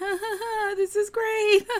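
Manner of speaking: forced fake cheerful laugh, smiling, high and slow. Retelling how a guest smiled through a tense dinner: imitating forced fake laughter. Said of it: "smiling through it".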